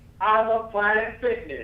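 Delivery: all-out yell, pitched very high, shrill. Asked to make the last repetition as loud as they can, the speaker is shouting as loud as possible. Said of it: "as loud as you can".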